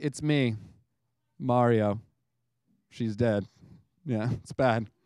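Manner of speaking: solemn, grave, very low, slow and deliberate tone. Joking about whether Mario ever had to say his line seriously: mock-serious Mario voice. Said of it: "more serious tone".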